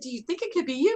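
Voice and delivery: play-acted gentle, kind, caring, loving tone, lifted pitch. Explaining tone of voice, the speaker re-enacts asking a woman something in a loving way. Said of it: "I meant it in a nice, loving way".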